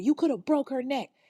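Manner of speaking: acted, high-pitched, rushed hollering, repeated over and over. A father yelling at the woman who put hands on his kids: imitating someone yelling. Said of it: "He's just yelling this over and over".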